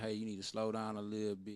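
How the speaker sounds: usual speaking voice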